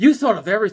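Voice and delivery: heavy, completely sarcastic, insincere tone. Retelling what he said to a woman in her kitchen, retelling a sarcastic remark. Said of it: "So I just went completely sarcastic".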